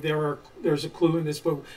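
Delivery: plain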